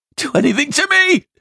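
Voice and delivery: shrill, loud yelling, voice pitched way up. Narrator reads a prisoner's outburst at the officer, yelled. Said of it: "He yelled".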